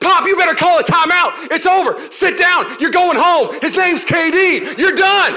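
very high, very loud, drawn-out screaming. Courtside fan retelling what he yelled at Popovich during the Spurs game, retelling screaming at Pop. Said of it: "I'm screaming at Pop".

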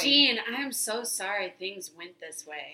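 ordinary delivery

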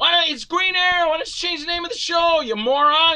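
put-on very high, shrill ranting yell. Speaker recounts watching a show, reenacting yelling at the TV. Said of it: "And I kept yelling at my TV".

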